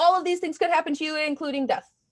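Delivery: rattled-off, rapid-fire drug commercial disclaimer voice. Imitating a prescription commercial listing side effects: fast-talking drug commercial. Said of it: "a prescription commercial that just talks really fast".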